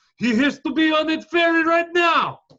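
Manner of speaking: put-on Dutch accent, very high-pitched. Retelling what the taxi driver said inside: imitating a dutch taxi driver's accent. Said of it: "all your accents".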